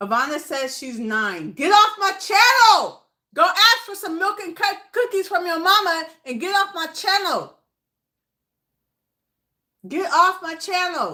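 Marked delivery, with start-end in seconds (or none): 1.5-11.2 high-pitched shouting. Blocking a child who says she's nine from the channel chat, yelling. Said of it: "Sorry if I'm yelling at the kids".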